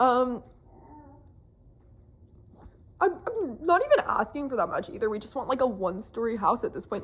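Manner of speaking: crying, tearful talk with voice breaking. Speaker talks to their phone giving an update, crying while talking. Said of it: "talking to my phone and crying".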